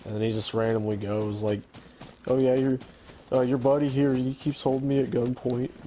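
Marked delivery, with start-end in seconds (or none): 2.3-5.7 put-on offhand delivery in a Canadian accent. Retelling what the Canadian player said in the game: imitating the Canadian player. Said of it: "He sounds just like him".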